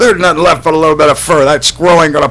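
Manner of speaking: smug voice, high-pitched and loud.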